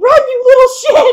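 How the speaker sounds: loud, high laughing shout.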